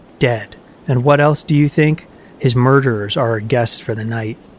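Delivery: ordinary delivery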